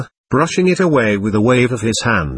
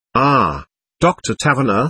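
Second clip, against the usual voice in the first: ordinary delivery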